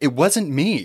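almost pleading, near-begging tone. Retelling a scene, voicing a character speaking to John: mock almost-pleading. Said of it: "almost pleading".

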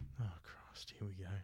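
exasperated, weary whisper under the breath.

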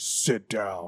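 deepened, fake, put-on low voice. Retelling how he changed his voice to say sit down, put-on low voice. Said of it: "he would like change his voice low like that".

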